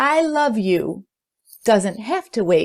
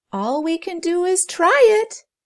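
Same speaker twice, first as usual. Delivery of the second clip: small, tiny, very high voice; 10 semitones higher than usual. Ruby, with Lovebird squawking, agrees to try; in a tiny voice. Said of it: "she said in a tiny voice".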